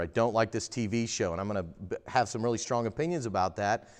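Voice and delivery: ordinary talk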